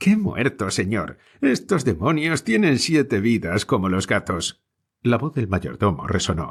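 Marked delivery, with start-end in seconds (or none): 0.0-4.6 teasing, jesting, scoffing, sing-song mocking tone. Narrator reads a farmhand answering an ironic question, in a teasing tone. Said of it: "repuso con tono zumbón".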